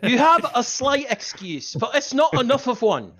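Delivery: high-pitched put-on Scottish accent. Answering another speaker in a scottish accent. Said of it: "that's a pretty good, pretty good accent".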